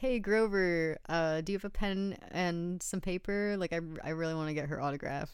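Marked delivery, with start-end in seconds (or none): none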